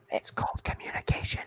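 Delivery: soft, unvoiced whisper.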